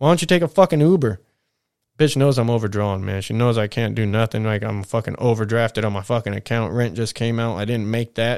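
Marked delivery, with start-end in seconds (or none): 0.0-1.2 acted, high, loud, angry yell. Retelling an argument with mom over car keys, retelling mom's yell. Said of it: "she just yelled at me".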